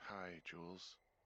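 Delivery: weary, tired, half-asleep, sleepy voice. Picking up the radio to talk with jules: tired voice. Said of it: "you sound tired".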